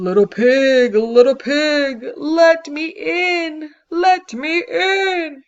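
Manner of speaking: booming, slow and menacing voice. Reading a story aloud, voice the wolf coming after the little pigs: Big Bad Wolf, big scary voice. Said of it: "with that big scary voice".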